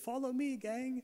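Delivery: little pleasant Irish voice, very high-pitched. On a river trip, call to the gang before a small waterfall, in Dave's pleasant Irish accent. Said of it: "in his little pleasant Irish accent".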